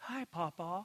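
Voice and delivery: put-on soft, sweet little-girl voice. Retelling hearing a greeting in the restroom, imitating Sterling's sweet little voice. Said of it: "this sweet little voice said".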